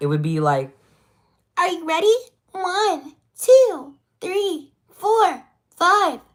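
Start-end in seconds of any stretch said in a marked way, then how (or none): 1.6-6.1 put-on very high, loud, drawn-out girlish cartoon voice. Demonstrating voices for animation, counting to five: very high-pitched voice. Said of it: "I could go even higher for like female".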